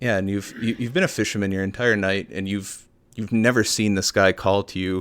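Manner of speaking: plain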